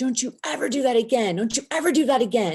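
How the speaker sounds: put-on high-pitched yelling. Retelling how the checkout lady yelled at the speaker, imitating someone yelling. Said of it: "the checkout lady just starts yelling at me".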